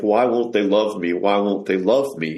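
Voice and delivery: put-on crying, pleading tone. Retelling what a woman said at her dying grandmother's bedside: retelling a crying plea. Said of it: "she just started crying and saying".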